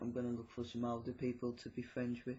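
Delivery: ordinary talk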